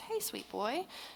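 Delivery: relaxed, hushed, very soft, easy voice. Showing how tone changes the greeting hey sweet boy: relaxed tone. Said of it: "I'm relaxed".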